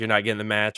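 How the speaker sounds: ordinary talk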